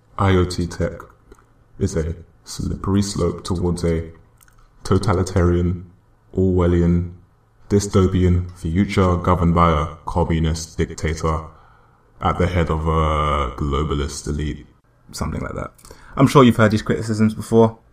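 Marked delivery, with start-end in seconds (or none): 0.2-14.7 slow, deliberate, put-on deep voice. Mocking what critics of decentralized technology say, in a put-on deep voice. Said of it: "let me put in my deep voice".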